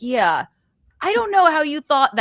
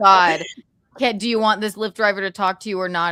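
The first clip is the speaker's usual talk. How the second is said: normal talking voice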